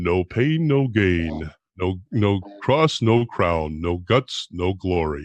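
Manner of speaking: very low, very slow, deliberate deep voice. Speaker with a bad cold uses the deep voice: Father Carapi impression, deep voice. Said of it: "I got a nice deep voice. I can do my Father Carapi invitation".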